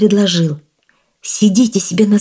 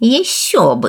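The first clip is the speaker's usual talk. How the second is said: puffed-up, boastful, self-important, bragging exclamation. The old woman answers the devil's praise of her work; boastful. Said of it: "заважничала старуха".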